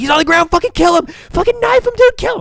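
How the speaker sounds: very high, very loud rising scream. Retelling being inside while cops banged on the door, imitating own past screaming. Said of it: "inside screaming, like".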